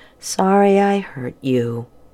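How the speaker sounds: quiet, soft, slow. A boy speaks to a girl after a struggle, quiet. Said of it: "he said quietly".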